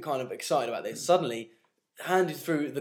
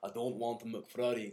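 lower, quieter put-on Scottish accent; 4 semitones lower, 9 dB quieter than usual. Retelling what a Scottish trumpet player said when refusing: imitating Alan's Scottish accent. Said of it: "the, uh, Scottish trumpet player".

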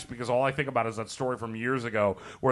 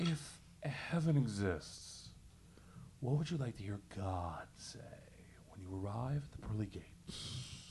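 slow, breathy whisper, every word weighed; 14 dB quieter than usual. Asked to read the question again, James Lipton voice. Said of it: "like James Lipton".

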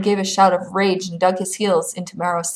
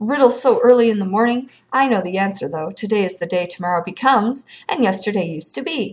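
ordinary delivery

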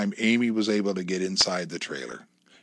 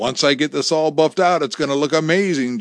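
beaming with pride, raised and high-pitched voice; 6 semitones higher, 6 dB louder than usual. [name], polishing an enameled vase at the trailer, speaks to Amy, proud. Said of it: "[name] said proudly".

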